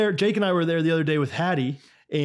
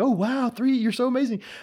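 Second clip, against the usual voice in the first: goofy, over-the-top, high delivery. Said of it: "kind and, like, kind of goofy".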